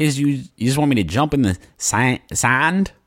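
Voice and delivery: attempted Boston accent. Retelling what the kids at the sand pile would say: attempted boston accent. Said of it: "I wanted to do a Boston accent there".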